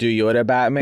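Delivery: normal talking voice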